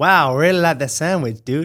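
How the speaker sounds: put-on dumb American accent. Asked to talk in an American accent, the speaker does a dumb American accent. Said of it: "can you talk in an American accent?".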